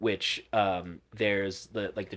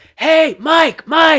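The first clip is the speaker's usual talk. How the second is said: shrill, loud, high-pitched yell; 17 dB louder than usual. Retelling how a date shouted after the speaker who ran away: imitating someone yelling. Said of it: "Like, yelling".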